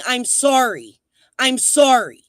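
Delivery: high, shrieked screaming, repeated. Ranting about someone jumping out of a creek screaming: mocking a screamed apology. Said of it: "jumping out of a fucking creek and screaming".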